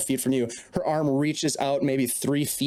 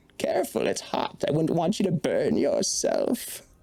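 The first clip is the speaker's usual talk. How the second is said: put-on sly, swooping, sing-song storybook old hag voice. Game master voicing the hag as she sets down a cup, Old Mona hag voice. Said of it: "In this episode the party strikes a deal with Old [name] - the Glazvolk Hag. / She bids you enter. / you see old Mona sitting in a rocking chair. / It is your memory. I want your sorrowful memory".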